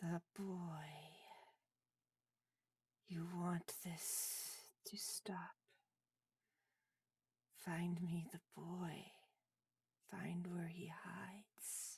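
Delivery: faint, very quiet skeleton voice whisper. Voicing a skeleton answering a player's question, in a whispered skeleton voice. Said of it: "a whispered voice issuing from the skeleton's mouth".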